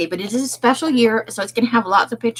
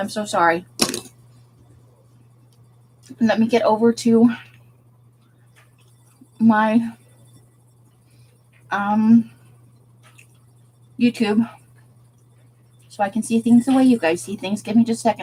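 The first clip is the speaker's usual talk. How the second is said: speaking with a full mouth. Getting YouTube open for viewers, talking with food in mouth. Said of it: "I'm still got food in my mouth".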